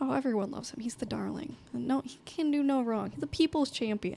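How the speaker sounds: dripping, heavy, laid-on-thick sarcastic tone. Answering whether a wealthy man is trusted around here: sarcastic. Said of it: "that was some serious sarcasm right there".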